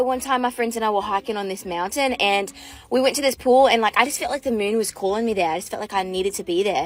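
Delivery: low, put-on Australian accent. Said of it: "with our stupid Australian accent".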